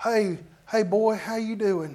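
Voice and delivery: put-on hearty good-old-boy voice. Retelling how a good old boy church deacon greets you: imitating a good old boy deacon. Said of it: "he'll be talking to you just like this".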